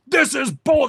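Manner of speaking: acted, cut-off irate voice. Retelling a customer's outburst inside McDonald's: imitating a customer yelling. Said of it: "he started yelling".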